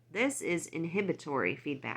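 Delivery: ordinary delivery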